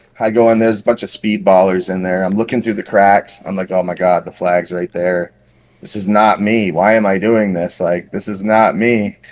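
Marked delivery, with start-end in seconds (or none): none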